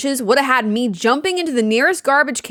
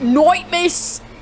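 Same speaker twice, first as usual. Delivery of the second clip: poor, mocking put-on British accent, high; 5 semitones higher than usual. A player repeats a game character's greeting to mock it: mocking British accent. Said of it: "What was that British accent?".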